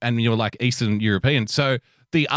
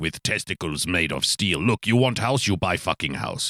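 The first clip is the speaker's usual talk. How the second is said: put-on English with an Eastern European accent; 6 semitones lower, 3 dB quieter than usual. Telling a story about a dude, quoting him in an eastern european accent. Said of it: "Eastern European so".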